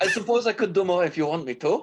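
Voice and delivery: put-on broken, terrible Cajun accent, pitched high. Speaking in character to the group, in Laguna's broken Cajun accent. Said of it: "In Laguna's broken Cajun".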